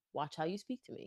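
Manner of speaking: calm, quiet delivery. Showing how she would confront someone: calm and quiet. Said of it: "I'm just gonna get my point across very calmly".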